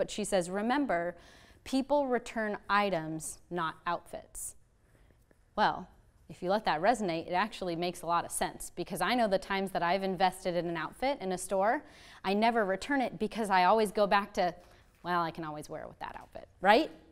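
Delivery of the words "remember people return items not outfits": ordinary talk, nothing marked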